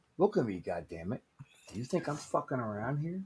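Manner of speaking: put-on intimidating tone. Staring down the others as a joke: mock menacing. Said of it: "I'm scared".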